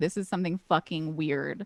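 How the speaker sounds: plain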